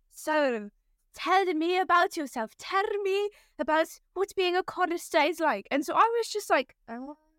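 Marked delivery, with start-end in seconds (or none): 0.2-5.7 put-on thick, very heavy German accent, laid on. Recalling a man questioning the speaker about being a chorister, in a heavy german accent. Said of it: "very heavy German accent".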